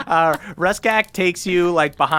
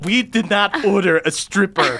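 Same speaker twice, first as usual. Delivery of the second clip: angry, flustered, insistent tone; 4 semitones higher than usual. Voicing a red-faced character denying the order. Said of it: "he gets real red-faced".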